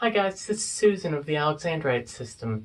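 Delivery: put-on girlish, childlike little-girl voice. Doing an impression of Susan in an interview: Susan impression, little-girl voice. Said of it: "that's basically my impression of Susan".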